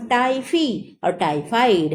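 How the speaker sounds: Typhi और typhoid stretched slowly and emphasized.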